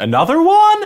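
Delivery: put-on West Country accent, very high pitch. Retelling a Bristol lady's answer to a BBC reporter, as Brenda from Bristol, put-on West Country accent. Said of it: "That's my West Country".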